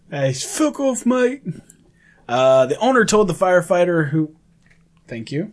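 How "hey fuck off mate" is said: put-on very high, slow parrot voice with British accent. Reacting to a story of a bird swearing at firefighters, imitating a parrot with British accent. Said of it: "saying it with a British yeah, accent".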